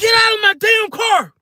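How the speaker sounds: mock very high-pitched, furious, shrill shout. Recounting a dispute with a passenger who refused to leave, the speaker retells an angry yell. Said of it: "after yelling at him".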